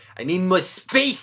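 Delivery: high, slow, sputtering, spray-filled spitty giant voice. Describing a giant from a story, acting out his line in a spitty giant voice. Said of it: "he has the spit".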